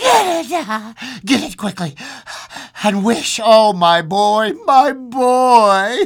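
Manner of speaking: put-on breathless high panting, boy stretched out. Narrator reading a wife urging her husband, who sits up in bed: panting. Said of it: "she panted".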